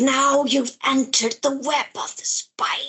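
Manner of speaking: as sinister and creepy as possible, villain voice. Retelling how a character spoke, in a put-on creepy voice. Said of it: "trying to make it as creepy as possible".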